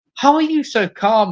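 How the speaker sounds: put-on high-pitched screaming outburst. Retelling a story scene, tied up with Abe: imitating Fitz screaming. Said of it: "screaming at him".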